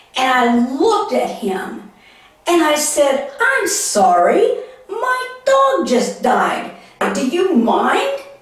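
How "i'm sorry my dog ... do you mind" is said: put-on annoyed, ticked-off tone, high and swooping. Retelling a reply to a vet after the dog died: retelling an annoyed retort. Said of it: "just totally ticked me off".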